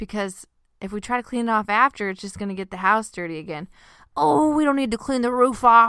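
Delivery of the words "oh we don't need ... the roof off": lazy put-on southern drawl, raised and high. Recalling the other speaker's answer about the roof, southern drawl imitating Corey. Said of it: "You gave me a southern drawl".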